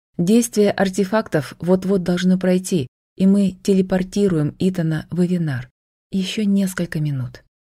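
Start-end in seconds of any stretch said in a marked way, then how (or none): none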